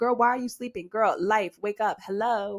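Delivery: stern, harsh scolding telling-off. Retelling own earlier words to the listeners: retelling a harsh scolding. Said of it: "that's why I'm speaking in this manner".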